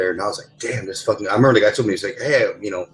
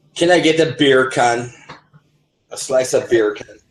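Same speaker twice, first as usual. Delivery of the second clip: put-on Jamaican accent; 3 semitones higher than usual. Imitating how people talk in Jamaica: imitating a Jamaican accent. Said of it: "The accent".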